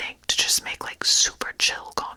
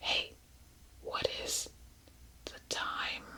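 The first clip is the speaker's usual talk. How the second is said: speaking in a quieter whisper. Testing a recorder by saying a line into it, whispering. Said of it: "Why did I just whisper".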